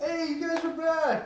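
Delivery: put-on very high-pitched, tipsy drunken yelling. Voicing a drunk character greeting the party at the inn: drunk yelling. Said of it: "Yelling out to you guys".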